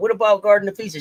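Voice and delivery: ordinary delivery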